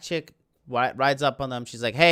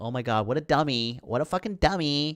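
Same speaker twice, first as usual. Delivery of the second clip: condescending, scornful, superior looking-down tone. Retelling how women in a film look down on men: condescending tone. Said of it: "just looking down on men like".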